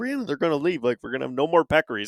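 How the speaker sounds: urgent, panicked, fast, rattled-off speech. Retelling a bow hunt, calling to Brianna, retelling panicking. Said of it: "I'm panicking".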